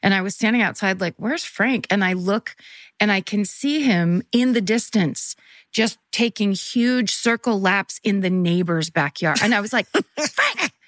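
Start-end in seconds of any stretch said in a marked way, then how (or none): 9.9-10.7 very high, held-in scream. Retelling calling a barking dog back from the neighbor's backyard: retelling a whisper-scream. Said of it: "I'm trying to whisper scream".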